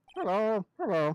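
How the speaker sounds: parrot voice. In an acted scene, voicing the parrot character: parrot voice. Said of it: "I like parrot voice anyway".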